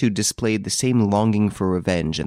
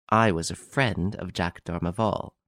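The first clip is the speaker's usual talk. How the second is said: plain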